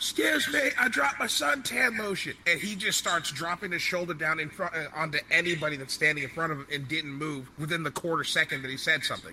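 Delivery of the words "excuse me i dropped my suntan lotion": very high, shrill yelling. Retelling how a man in a crowd shoved past everyone: retelling a man's yell. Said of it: "all of a sudden just starts yelling out".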